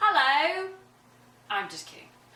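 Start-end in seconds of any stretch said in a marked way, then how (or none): 0.0-0.7 put-on English accent, pitched up. Joking about using the refrigerator instead of the oven: put-on English accent. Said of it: "We all want to have an English accent".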